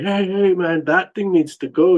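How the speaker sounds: mock frightened, shouted screaming. Speaker retells screaming at something that scared them, retelling a scream. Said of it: "I started screaming at it".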